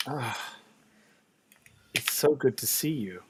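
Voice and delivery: soft feminine spirit voice. Voicing a spirit speaking through an entranced fortune teller: soft, feminine spirit voice. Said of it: "This voice is softer".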